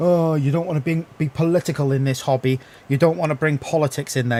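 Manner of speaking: ordinary talk, nothing marked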